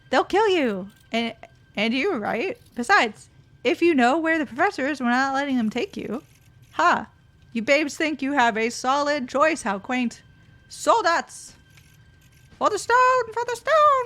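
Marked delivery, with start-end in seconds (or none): 10.6-14.0 tiny, very high, squeaky little goblin voice. Playing a goblin character in a battle scene, in a little goblin voice. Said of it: "My little goblin voice".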